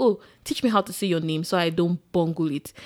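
ordinary talk

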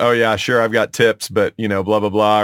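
plain

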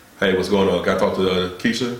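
put-on deep voice. Demonstrating how brothers lower their voice calling a girl, lowered deep phone voice. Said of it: "Why do we lower our voice that much?".

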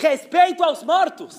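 very high-pitched, loud, rattled, nervous yell. Telling a joke, voicing the rabbi's reply, retelling a shout. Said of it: "ele deu um grito".

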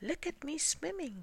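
very high, squeaky, small voice. Roo calls out to the others from the middle of his pool, squeaking. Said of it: "squeaked Roo".

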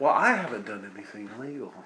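awkward, uneasy, greasy voice. Voicing a sweaty, awkward shopkeeper greeting two visitors: sweaty, awkward shopkeeper voice. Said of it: "He says".

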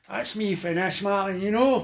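Glaswegian speech. Retelling what the man sitting next to you on the bus said, in a Glasgow accent. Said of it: "his Glasgow accent".

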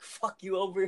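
put-on shout. Retelling getting out of the water after saving a friend: retelling own yell. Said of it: "the first thing I yell was".

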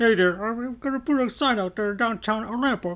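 very high little puppet frog voice. Reading out news about an owner named Kermit, break into a Kermit impression for everybody. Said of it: "That's my Kermit impression".

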